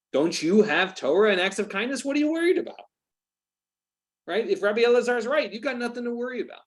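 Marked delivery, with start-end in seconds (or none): 0.2-2.8 mock sarcastic tone, higher. Retelling a question about torah and kindness: imitating a sarcastic tone. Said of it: "very clearly being sarcastic".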